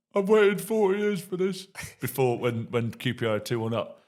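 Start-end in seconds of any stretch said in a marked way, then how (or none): 0.2-1.7 weeping, very high-pitched crying voice. Retelling a friend at a football match: imitating Chris crying. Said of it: "sucking his thumb, crying, going".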